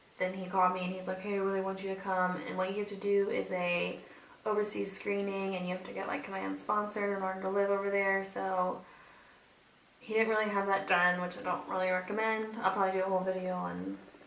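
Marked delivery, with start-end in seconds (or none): none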